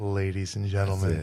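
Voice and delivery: low, soft, sexy, seductive phone voice.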